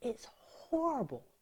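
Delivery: whispering. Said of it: "I'm whispering because".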